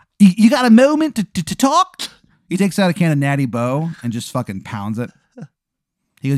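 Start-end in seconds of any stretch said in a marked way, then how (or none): 0.2-2.0 bad Maryland accent, much higher, louder, slower. Retelling how he speaks to Danny after introducing himself, do Shithead Steve's horrible Maryland accent. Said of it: "He has a horrible Maryland accent".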